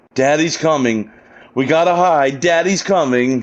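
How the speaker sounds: frantic, panicked, freaked-out voice. Retelling a game scene where Mia starts freaking out: imitating someone freaking out. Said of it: "she starts freaking out".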